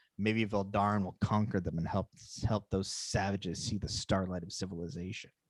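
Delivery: muttering under the breath. Game narrator voicing a guard the players overhear, muttering under his breath. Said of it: "hear him mutter under his breath".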